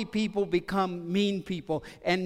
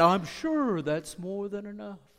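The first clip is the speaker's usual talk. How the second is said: cheeky, snarky, sarcastic tone. Retelling a reply one of the snarky ones gave the boss, as a mock-snarky retort. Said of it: "one of the snarky ones kind of kicked in".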